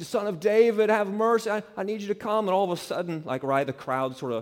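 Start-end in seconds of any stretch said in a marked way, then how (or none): 0.0-2.5 piercing, shrill scream pitched very high. Retelling Bartimaeus crying out to Jesus from the corner; acting out a scream. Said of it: "he's just screaming".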